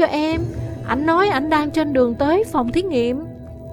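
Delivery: ordinary delivery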